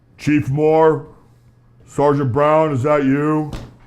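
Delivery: very deep, booming bass rumble. Narrating a stranger who leans forward and calls to the officers, deep bass voice. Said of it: "you hear a deep, deep bass voice".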